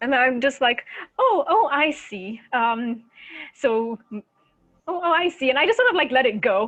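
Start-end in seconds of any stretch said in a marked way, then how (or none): 1.2-5.5 very slow, dragged-out, feigned ignorance. Playing a character who hides what she knows: feigned ignorance. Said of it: "I pretend ignorance, of course".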